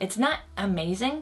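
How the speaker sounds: ordinary talk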